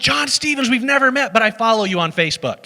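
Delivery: high, loud, eager tone.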